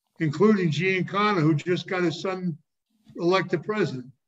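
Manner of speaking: plain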